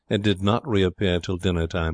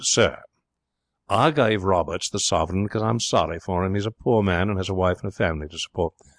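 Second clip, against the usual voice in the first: plain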